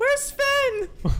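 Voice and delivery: put-on loud, very high, shrill little-kid holler. The game master voices an old friend who appears behind the players: loud child voice. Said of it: "His his loud ass child voice".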